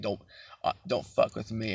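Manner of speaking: put-on deep gruff older man voice. Describing the older man's voice the speaker heard: deep grizzly older man's voice. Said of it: "had like a deep grizzly voice".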